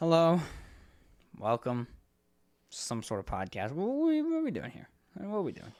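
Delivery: unexcited, going-through-the-motions host voice. Imitating the co-host's intro, imitating a bored podcast intro. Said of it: "You're like".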